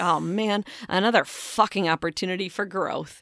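slow, heavy, dripping sarcasm. Showing how a line sounds with the sarcasm font on, sarcastic. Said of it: "you need to have like the sarcasm font on that".

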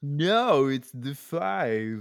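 exaggerated put-on California accent. Host insists the road is called the 5, in a put-on California accent. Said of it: "every episode someone has to do that voice".

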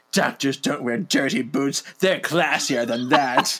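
mock porn-style delivery. Recapping a show, the speaker quotes Murphy in a put-on porno-sounding voice. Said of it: "You make it sound like a porno when you say it".

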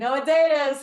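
high, loud mocking voice. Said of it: "as my sister mocks me".

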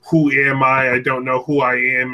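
begging, imploring, pleading voice. Retelling how the character pleads with the doctor: imitating Shadow pleading. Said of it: "like pleading with Doctor Eggman".

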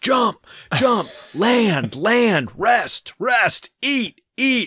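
very high, slow, drawn-out, whip-cracking barked delivery. Retelling a character who gives orders for everything: imitating someone barking orders. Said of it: "cracking the whip for everything".

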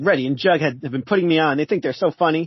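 ordinary delivery

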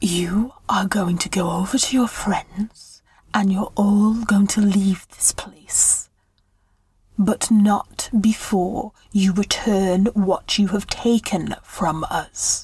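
threatening stage whisper. A woman holding a dagger to the listener's throat from behind, whispering.

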